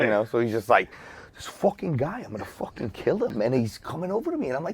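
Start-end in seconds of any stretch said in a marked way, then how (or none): 1.3-4.5 put-on menacing voice, higher and quieter. Retelling what Ray Liotta said next to the DJ booth: Ray Liotta impression, menacing. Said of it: "so it just sounds like s-, he's gonna kill somebody".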